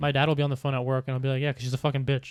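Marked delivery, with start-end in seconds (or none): 1.4-2.3 put-on angry tone of voice. Retelling own remark about someone at dad's work: imitating own angry remark. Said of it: "I said it in an angry way".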